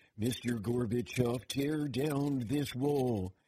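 slow, deliberate, each word drawn out and weighed. Showing the only way they can do Ronald Reagan. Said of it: "the only way I can do Ronald Reagan".

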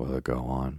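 ordinary delivery

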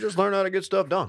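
very high-pitched formal speaking voice. Asked to repeat a quote in a former president's voice: Barack Obama voice. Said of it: "Can you actually say that in Barack's voice?".

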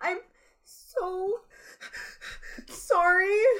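very high, shrill, put-on weepy crying voice. Mocking a woman who pretended to cry, imitating fake crying. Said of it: "you're just doing a thing with your voice".

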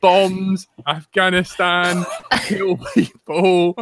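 mock restrained rant, slow, drawn-out mild yelling. Retelling how a friend shouted words at his Alexa: imitating someone screaming. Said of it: "start screaming, like".

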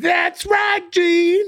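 very high-pitched rock-star speaking voice. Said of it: "and [name] would say".

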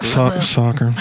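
mock begrudging mutter under breath. Imitating in-laws saying the word for football: imitating muttering under breath. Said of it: "kinda say it under their breath".

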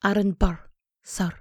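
affected, put-on Scottish accent. Speaker trying the quoted line to show it sounds better in a scottish accent. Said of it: "I think it sounds better in a Scottish accent".

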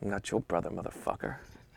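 whispered, mumbled mutter under the breath. Retelling how a golf partner answered a greeting: imitating a muttered insult. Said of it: "And the guy mutters".

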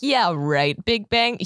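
imitated sarcastic, scoffing tone. Explaining how a scientist critiqued an idea, retelling a sarcastic remark. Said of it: "sarcastically being like".

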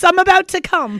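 high, loud mock British accent. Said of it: "I just picture them being like".

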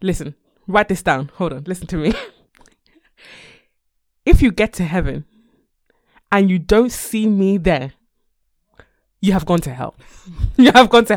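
loud preacher's pulpit delivery. Retelling a video of a pastor, imitating the pastor's delivery. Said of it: "I'm gonna do it in exactly how he said it".

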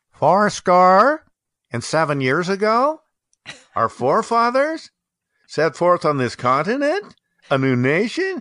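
uptalk, every phrase end rising in a questioning lift. Showing the Gettysburg Address delivered in uptalk: rising uptalk intonation. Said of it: "always going up like that".

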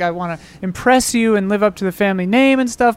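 plain

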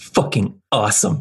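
offhand muttering to oneself, sounding impressed. Voicing a character reacting as he grabs the controls: muttered under breath. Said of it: "under his breath".

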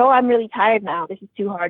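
plain

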